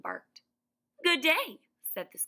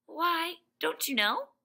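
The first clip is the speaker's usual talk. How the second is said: very high, astonished, surprised tone; 9 semitones higher than usual. A girl replies in surprise to a stuffed man who asks who Oz is. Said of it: "she returned in surprise".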